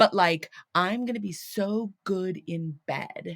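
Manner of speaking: voice dropped a bit. Speaker with open windows keeps from being overheard, voice lowered slightly. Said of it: "I'm lowering my voice slightly".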